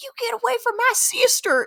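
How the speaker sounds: put-on country twang, pitched very high. Describing how a character talks in a movie, imitating a country twang. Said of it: "has a little bit of this country like twang".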